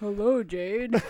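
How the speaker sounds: low put-on voice. Showing a partner how they say the greeting, in a low put-on voice. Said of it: "You do it down low".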